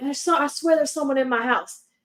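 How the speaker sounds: put-on, mild, toned-down scream, played small. Retelling a friend's panicked phone call: imitating a friend screaming. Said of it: "heard her screaming at me through the phone".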